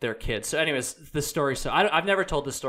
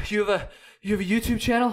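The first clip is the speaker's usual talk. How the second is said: play-acted winded, puffing, breathless, pitched up; 7 semitones higher than usual. Retelling a hiker who ran down to ask a question: imitating someone out of breath. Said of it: "super out of breath".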